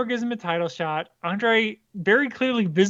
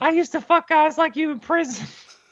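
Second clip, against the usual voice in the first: put-on high, pitched-up old-wrestler voice; 7 semitones higher than usual. Showing the others on the podcast what the man sounds like, do a Terry Funk impression. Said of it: "this isn't a insulting impression".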